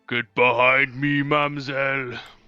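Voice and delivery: very deep giant voice. Game narrator voicing Giant Toby dashing through the gap to June: very deep Giant Toby voice. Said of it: "the very deep voice of Giant Toby being like".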